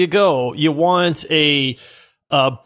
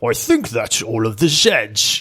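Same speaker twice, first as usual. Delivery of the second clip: put-on low slow Scottish accent; 5 semitones lower than usual. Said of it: "You sounded like Sean Connery".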